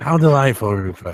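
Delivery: loud, rasping, ugly, horrible hoarse character voice. Voicing a game character greeting another character, in a horrible hoarse voice. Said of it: "he's got this like horrible hoarse voice".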